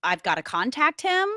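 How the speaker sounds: ordinary delivery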